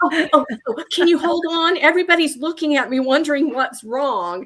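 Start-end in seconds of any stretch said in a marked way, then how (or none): 0.0-1.8 high, thrilled, squealing shriek, acted. Retelling a pharmacist's reaction on the phone in front of customers, imitating excited screaming. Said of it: "there's this just like screaming".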